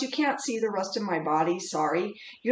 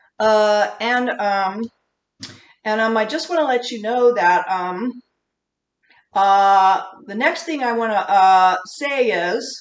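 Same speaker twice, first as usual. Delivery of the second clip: loud, hesitant rambling full of ums and uhs; 6 dB louder than usual. A teacher shows the class what vocal fillers sound like: full of ums and uhs. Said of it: "Here's the other big one".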